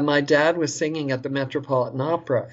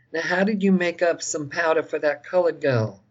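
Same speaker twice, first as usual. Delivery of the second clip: put-on thick Southern accent; 3 semitones higher than usual. Retelling a story, the speaker quotes their mother's question to the Baha'i; imitating thick Southern accent. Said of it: "with her thick Southern accent".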